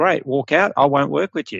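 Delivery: ordinary talk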